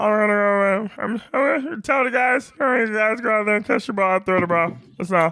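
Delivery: very high-pitched puppet frog voice. Talking about playing football, Kermit the Frog voice. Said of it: "He's just doing his Kermit the Frog impression".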